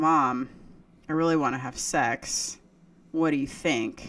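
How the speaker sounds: ordinary delivery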